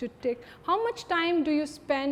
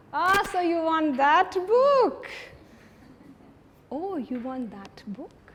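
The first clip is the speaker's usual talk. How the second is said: loud, mocking, teasing taunting tone; 3 semitones higher, 5 dB louder than usual. Showing how the same line can be said different ways, in a taunting manner. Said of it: "I could also say it in a taunting manner".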